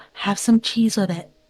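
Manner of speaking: soft, hushed whispered aside. Voicing a character quietly advising another at the table: whispering. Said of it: "Queenie would whisper to Sonder".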